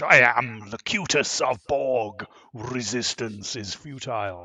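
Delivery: full Shakespearean English delivery. Showing how the Locutus lines were really said: Shakespearean English Patrick Stewart as Locutus. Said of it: "he had to put on the Shakespearean English".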